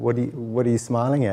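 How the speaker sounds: normal talking voice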